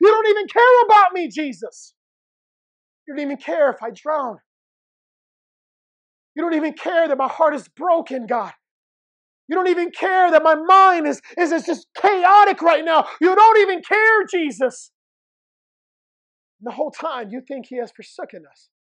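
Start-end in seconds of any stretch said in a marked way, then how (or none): 0.0-14.9 mock tearful, sobbing cry. Acting out someone crying out to Jesus while driving, acting out tearful crying out. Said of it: "you're crying so much and you're crying out".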